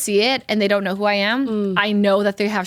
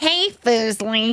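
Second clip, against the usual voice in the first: breathy voice, breathed up close. Asked to imitate the voice again, retelling the nickname greeting: imitating Albert's voice. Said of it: "you gotta imitate the voice".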